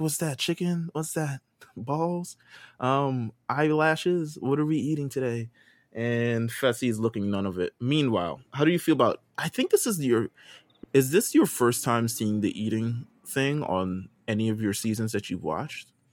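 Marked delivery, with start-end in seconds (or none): 0.0-5.5 high, puzzled reality contestant voice with rising pitch. Retelling a contestant reaching the eating checkpoint, imitating Casey. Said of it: "she's like".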